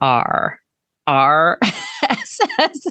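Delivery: pirate-sounding letter R. Spelling out RSS feed in a Boston accent: pirate-sounding letter R. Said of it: "Now I sound like a pirate".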